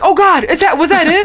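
high, worried, gasping voice.

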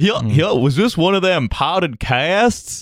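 put-on unsexy yokel voice. Opening the free episode, a co-host does the unsexy yokel voice. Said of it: "The unsexy yokel voice".

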